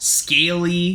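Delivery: ordinary delivery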